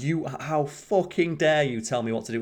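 outraged, indignant, furious screaming outburst. Retelling the furious messages a guy sent: imitating someone screaming. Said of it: "screaming at him".

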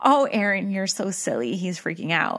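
plain

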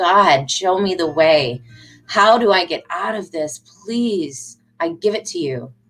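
put-on crying out, slowed. Retelling a struggling woman's prayer to God; retelling a cry out to God. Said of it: "she went and just cried out like".

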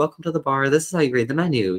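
soft airy voice. Showing how guests are greeted at the bar, in a nice breathy voice. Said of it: "pretty nice, breathy".

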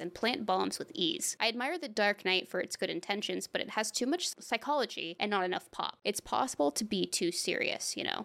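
usual speaking voice

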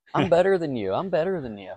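put-on very high, bragging, cocky kid voice. Talking about kids with too much confidence, doing an impression of those kids. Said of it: "I love your impression of those kids too".

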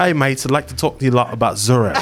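put-on, mock British accent. Retelling how a man named Prism came in with a theory, imitating Prism's British accent. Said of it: "you British?".

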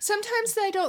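really high-pitched woman's voice. Chatting with others, voice suddenly comes out as a really high lady voice. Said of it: "that was a really high lady voice".

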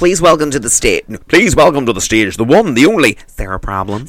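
fake American announcer accent. Demonstrating a joke stage introduction for a listener, in a put-on american shop-manager accent. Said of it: "It does work in that accent".

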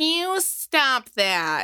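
high, swooping cartoon detective voice through laughter. Laughing too hard, the speaker tries a Velma voice. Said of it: "if I wasn't laughing so hard, I would have been in my best Velma voice".

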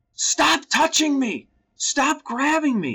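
mock screaming, pitched very high. Retelling a child's reaction at being grabbed, imitating a scream. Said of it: "She just started screaming".

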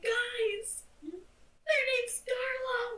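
high, drawn-out hollered yell. Yelling back to the group in character: yelling back. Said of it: "yell back".

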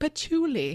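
put-on British accent on patchouli.

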